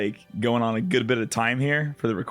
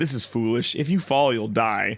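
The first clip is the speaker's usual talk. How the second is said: play-acted completely composed, unbothered, super calm. Retelling a scene where Seymour warns someone: imitating Seymour super calmly. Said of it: "super calm, is like".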